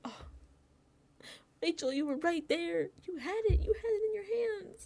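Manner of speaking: very high, devastated voice full of despair. Speaker retelling reacting to someone walking off with the wrong piece; acting out being devastated.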